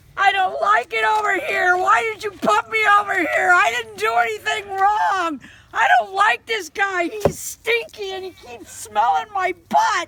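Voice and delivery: very high, very loud, shrill wailing complaint. Voicing a goat's sad tale of woe while filming: voicing Penny the goat's complaints. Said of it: "so this is Penny's".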